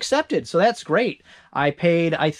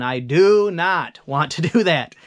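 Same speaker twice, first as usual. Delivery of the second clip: slow, reluctant, grudging, disdainful tone; 3 dB louder than usual. Explaining going back to doing the books manually: reluctant, disdainful tone. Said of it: "if you can hear by my tone".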